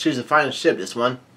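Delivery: plain reading voice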